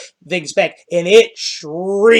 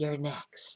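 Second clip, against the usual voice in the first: barely there, very soft, sweet feminine whisper; 4 semitones lower, 19 dB quieter than usual. Game master voicing a bleeding creature speaking to a player, whispering in a sweetly feminine voice. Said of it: "in this whispering, almost sweetly feminine voice".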